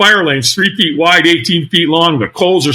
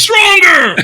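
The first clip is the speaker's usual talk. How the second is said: put-on very high-pitched screaming; 13 semitones higher, 3 dB louder than usual. Retelling how the trainer screamed in his face: imitating the trainer screaming. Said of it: "So he screamed at me".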